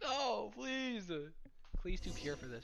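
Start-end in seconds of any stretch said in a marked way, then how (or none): 0.0-1.1 acted, very high, tearful, sobbing, pleading voice. Imagining how she will react if Klee takes the witness stand; mock crying. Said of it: "she's gonna be like crying".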